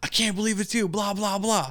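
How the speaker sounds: high-pitched screaming, yelling outburst. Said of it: "was yelling and screaming like".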